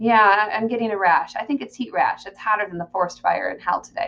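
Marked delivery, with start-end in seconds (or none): none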